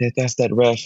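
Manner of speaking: put-on whisper. Retelling what people around were saying at the game: imitating people whispering. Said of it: "People around me were all whispering".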